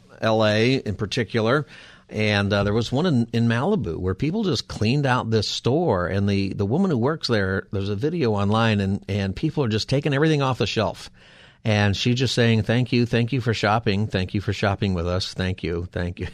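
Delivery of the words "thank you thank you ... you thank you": mock sarcastic tone. Retelling a store worker's words as people empty the shelves: imitating sarcastic thanks. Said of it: "Just kind of this sarcastic way of".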